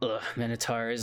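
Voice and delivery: muttering quietly under breath. Repeating the guard's remark about minotaurs under his breath. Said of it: "under his breath".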